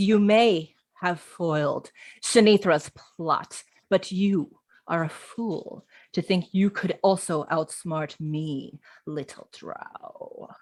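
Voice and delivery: deep, slow, low, rumbling monstrous voice. A game narrator voices a being speaking to a drow, low rumbling monstrous voice. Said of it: "Getting low and rumbling".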